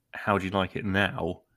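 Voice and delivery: ordinary talk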